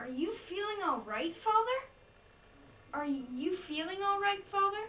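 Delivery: puzzled, bewildered, totally confused quizzical tone. Recording a take of the line as asked, really quizzical, totally confused. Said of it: "really quizzical, uh, like totally confused".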